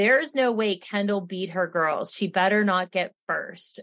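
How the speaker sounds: ordinary delivery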